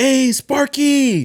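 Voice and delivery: very high-pitched shouting. Retelling a coworker calling out at a Home Depot: imitating someone yelling. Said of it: "He yells out".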